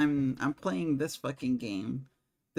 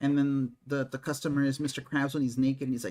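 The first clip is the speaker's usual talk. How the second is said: plain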